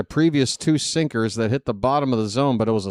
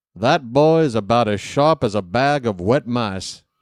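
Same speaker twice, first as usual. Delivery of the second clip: put-on cartoon rooster voice. Baseball commentator joking about a goofy-looking player, Foghorn Leghorn voice. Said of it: "I think Foghorn Leghorn might say of Cano".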